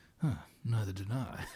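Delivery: low, quiet, grumbly voice. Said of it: "we always give him the grumbly voice".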